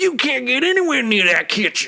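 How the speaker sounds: high, loud, put-on Southern US accent shout. Retelling a background chef trying to stop Sanji: mock shouting in Southern accent. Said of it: "he just happens to have a southern accent".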